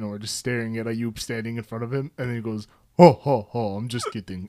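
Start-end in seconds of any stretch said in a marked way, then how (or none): 3.0-4.5 loud, booming ho-ho-ho laugh. Retelling the sheikh laughing off his joke: imitating a Santa laugh. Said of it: "Like Santa".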